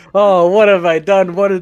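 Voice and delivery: loud, high, mock anguished wail of regret. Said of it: "watch a guy go like".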